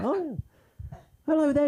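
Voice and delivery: put-on British accent, pitched high. Mocking how people here do the British accent, high-pitched fake British accent. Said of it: "They all go up about three octaves".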